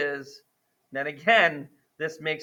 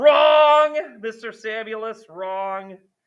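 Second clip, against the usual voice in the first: loud, drawn-out yell with wrong stretched long; 6 semitones higher, 7 dB louder than usual. Catching own mistake while sketching a polynomial graph: yelling. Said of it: "Sorry for yelling in YouTube".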